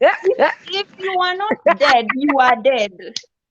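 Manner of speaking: emphatic, mock, forceful delivery.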